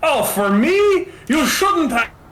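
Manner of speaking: bad fake French accent, very high. Telling a story, a voice heard from below speaks in a horrible French accent. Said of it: "in this horrible French accent".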